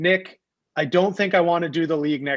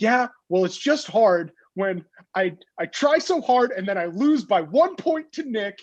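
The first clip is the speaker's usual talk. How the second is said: mock pained, hurt, passionate, emotional delivery; 4 semitones higher than usual. Retelling what a league member said after losing: imitating a hurt, emotional voice. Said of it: "the emotion and hurt in his voice".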